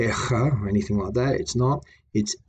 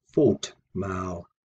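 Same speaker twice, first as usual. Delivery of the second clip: first syllable fot stressed, louder than maal; 3 semitones lower than usual. Explaining stress in the compound for foot measure: stress on fot in fotmaal. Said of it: "I pronounce the word fault uh, a little bit louder than I do mal".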